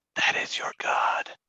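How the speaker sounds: hushed, whispered aside. A player's character passing one of the followers, whispering. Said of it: "Can I whisper to one of the followers".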